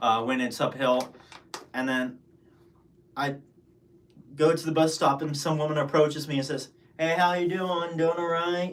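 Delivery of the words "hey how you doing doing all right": put-on thick Pittsburgh accent. Retelling a woman at a bus stop greeting the speaker, thick Pittsburghese accent. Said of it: "in this very thick Pittsburghese accent".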